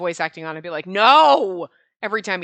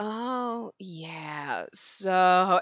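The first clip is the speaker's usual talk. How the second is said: slow, unhurried drawl, "so" stretched out; 7 dB quieter than usual. Mimicking a game character's voice, Sammy's drawn-out words. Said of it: "he kind of draws out his words".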